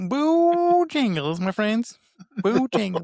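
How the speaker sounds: poor fake North Carolina accent. Asked on the podcast about Bojangles, answering in a bad North Carolina accent. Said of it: "the worst at doing impressions of other accents".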